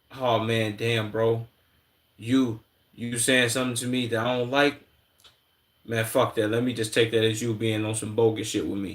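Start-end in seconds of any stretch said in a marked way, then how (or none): none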